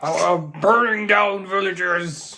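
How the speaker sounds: put-on dragon voice. Role-playing a court case, a dragon answers a lawyer's question: dragon voice. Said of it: "It's my dragon voice".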